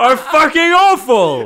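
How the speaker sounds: heated, high-energy ranting. Explaining the podcast's mission to a co-host: sounding like Gordon Ramsay. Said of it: "you sound a little bit like Gordon Ramsay there".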